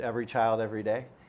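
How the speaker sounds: ordinary delivery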